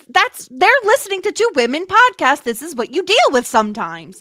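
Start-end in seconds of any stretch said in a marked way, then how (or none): 0.2-2.5 high, loud yell. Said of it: "You don't have to yell at them".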